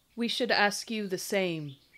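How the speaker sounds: put-on heavy foreign accent on the word "Common". Voicing a stranger in the woods answering a challenge: thickly accented Common. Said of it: "in a thick, thickly accented common".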